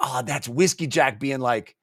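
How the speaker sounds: normal talking voice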